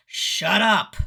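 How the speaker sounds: very loud, big, menacing, evil male voice. Retelling what was heard from the other side, in a big evil male voice. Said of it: "the big male evil voice goes".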